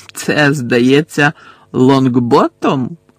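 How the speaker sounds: taunting, sneering. Narrator reads a man taunting a boy held by his captors, mocking and sneering. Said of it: "глузливо посміхнувся Луціус Мелфой".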